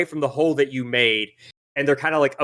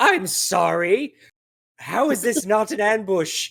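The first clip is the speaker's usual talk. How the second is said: acted flustered pleading voice, higher; 6 semitones higher than usual. Voicing the boss, who is in the middle of surrendering: voicing the flustered boss. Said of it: "he kinda looks at everything and gestures".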